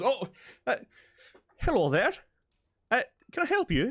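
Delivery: jumpy, startled, very high and loud. Voicing a blacksmith startled by a visitor walking up: startled. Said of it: "with a little bit of a startled jump, goes".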